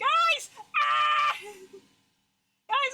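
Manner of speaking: shrill, very high-pitched, loud shrieking screams. Reacting on stream to something happening off camera: screaming. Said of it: "I'm screaming!".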